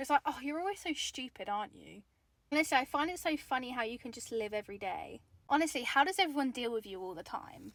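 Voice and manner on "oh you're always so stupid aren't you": put-on belittling tone, quieter. Acting out how someone undermines you: imitating an undermining put-down. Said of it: "undermining you".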